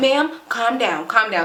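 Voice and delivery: ordinary delivery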